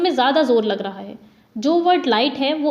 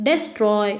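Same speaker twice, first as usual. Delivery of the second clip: destroy with -troy stressed and des- kept light; 4 semitones lower than usual. Explaining which syllable of destroy carries stress: stress on troy in destroy. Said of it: "Troy को बोलने में ज़्यादा stress लग रहा है, जबकि डेस को बोलने में ज़रा भी स्ट्रेस नहीं लग रहा है".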